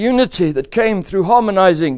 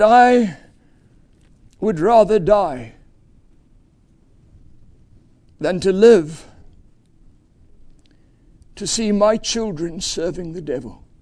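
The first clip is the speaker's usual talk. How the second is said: put-on voice breaking, earnest and fearful. Speaker repeating what a man said to his children in the car, retelling a broken, fearful plea. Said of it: "He said it with a voice so broken, so earnest, so fearful".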